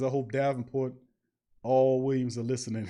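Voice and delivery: ordinary talk, nothing marked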